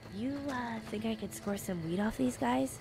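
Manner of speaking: very quiet, secretive, hushed half-whisper. Player speaking as their game character: half-whispering. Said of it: "why am I whispering?".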